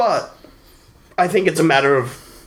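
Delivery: talking through a yawn. Mid-thought in a conversation, yawning while speaking. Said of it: "sorry, I'm yawning while I'm saying that".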